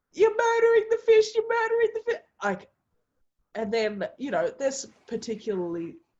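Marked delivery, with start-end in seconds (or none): 0.2-2.3 very high, shrill, loud screeching scream. Retelling how a woman at a funeral screamed at the family: imitating a woman screaming. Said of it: "she starts screaming".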